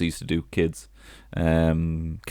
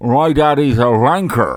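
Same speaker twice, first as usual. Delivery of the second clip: very slow, loud speech with mouth stretched by hand; 7 semitones higher, 9 dB louder than usual. Showing what comes out when pulling your cheek: talking while pulling own cheek. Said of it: "while holding your cheek like that".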